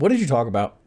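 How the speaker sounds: imitated bored, lifeless, dead-eyed flat tone. Imitating someone asking about the radio show: imitating a dead-eyed flat question. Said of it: "And just sit there fucking dead-eyed".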